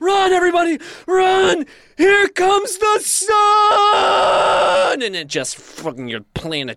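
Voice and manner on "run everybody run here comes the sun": mock very high, very slow, drawn-out screaming. Describing a planet crashing into the sun, acting out the cry: imitating screaming. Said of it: "you start screaming".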